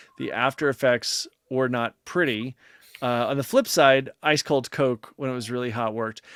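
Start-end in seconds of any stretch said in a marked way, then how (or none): none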